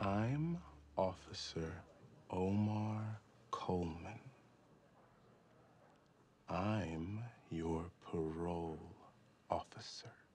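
very slow, deliberate, drawn-out speech. A parole officer introduces himself to a new parolee; talking very slowly. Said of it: "Why are you talking so slow?".

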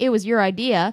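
usual speaking voice

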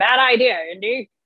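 friendly, warm delivery. Describing an actor's famous line in his deep voice: John Rhys-Davies deep voice. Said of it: "the guy that has the really deep voice and he goes".

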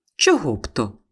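surprised, astonished tone. The narrator, phoned by an excited cousin, answers, surprised. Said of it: "здивовано запитала я".

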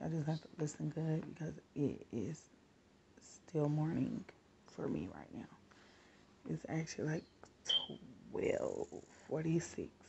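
low, soft, hushed talking. Talking to viewers in the morning while the kids still sleep: talking low. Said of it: "I'm talking low".

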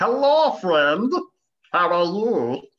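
grating, irritating, high, slow, drawn-out voice. Asking how annoying the tax collector's voice should be: annoying tax collector voice. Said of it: "How annoying or not annoying should this tax collector's voice be?".

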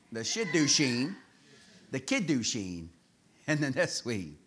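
Shidduchim, Kiddushin, Neswing pronounced slowly, carefully and softly.

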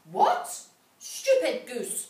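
very loud, swooping, vicious witch's snarl. The witch, told by the girl the oven won't light, snarling. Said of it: "snarled the witch".

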